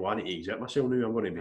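ordinary talk

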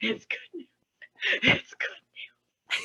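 mock breathy whisper through tears. Retelling waking someone up with good news: imitating own crying.

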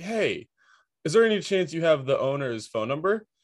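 put-on breezy, offhand tone. Retelling asking a tenant for a phone number: imitating own nonchalant question. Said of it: "super nonchalant about it".

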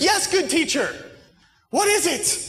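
put-on very high, slow, sheepish and meek voice. Acting out Simon's changed tone toward the teacher: meek Simon impression. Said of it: "Simon's tone changes here. He's like a dog with a tail between his legs".

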